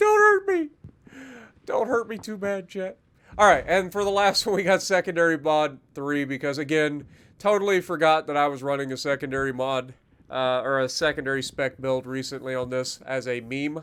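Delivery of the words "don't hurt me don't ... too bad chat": fake sobbing, pleading tone. Admitting a mistake and begging chat not to hurt him; mock crying. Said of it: "I'm actually crying right now".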